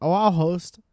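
matter-of-fact. Retelling how Zoya offered to host: imitating Zoya, matter-of-fact. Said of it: "Very matter of fact".

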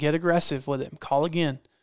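ordinary delivery

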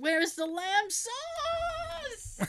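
"sauce" very high, very slow, long-stretched. Trying a Gordon Ramsay accent on famous insults: Gordon Ramsay accent. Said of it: "try to do the Gordon Ramsay accent".

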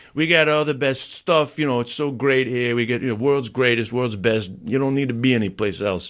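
put-on typical New York accent. Imitating how people in New York talk: typical New Yorker voice. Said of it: "typical New Yorker".

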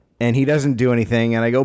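ordinary talk, nothing marked

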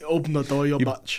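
low, soft, fake South African accent. Friends trade a quoted line back and forth: put-on South African accent. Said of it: "That's how they say bitch. South Africa".

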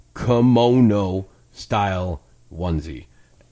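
said slowly. Repeating a term slowly so listeners can look it up. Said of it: "I'll say it slower so you can look it up easier".

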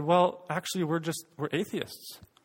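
imitated flat, expressionless tone. Retelling a woman's reply to the speaker's question about faith, imitating her flat voice. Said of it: "without much expression in her voice".

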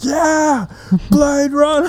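put-on shrieking, thrilled scream, very high pitch. Imitating people next to him at the film as it started: retelling people screaming. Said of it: "they just started screaming like".

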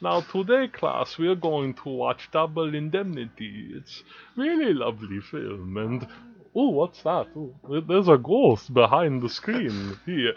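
hushed, soft vampire voice. Act out Katz speaking to his film class before a movie, in Katz's voice like a vampire. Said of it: "He had the voice like a vampire".

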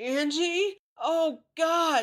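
very high, loud, screaming yell. Mom runs toward the narrator and jj from down the road, yelling. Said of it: "she yelled".

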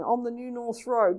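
ordinary talk

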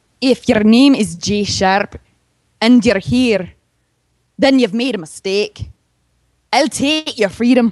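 put-on Scottish accent. Asked by another speaker to do Scottish, performing a line: Scottish accent. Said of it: "Can you do Scottish?".

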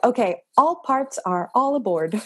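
put-on flight attendant announcement voice. A podcaster recounts answering their inner child, in a flight attendant voice. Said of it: "you switched to your like flight attendant voice".

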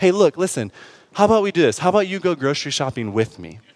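play-acted meek, humble, deferential, submissive tone. Retelling what she could have said to him instead, imitating a humble, submissive tone. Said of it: "in a very humble in and in a submissive way".

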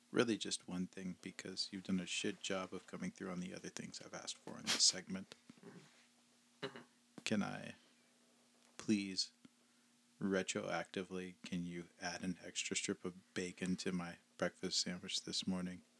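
ordinary delivery

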